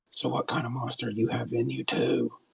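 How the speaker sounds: quiet, hushed whisper. Playing a character who leans over and asks another character something, whispering. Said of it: "Heckle's going to whisper in".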